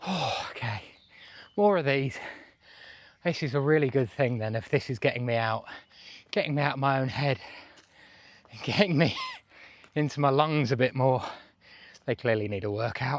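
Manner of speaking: out of breath, panting. Hiking up a steep path, talking to the camera: out of breath. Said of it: "I'm out of breath within the first five minutes".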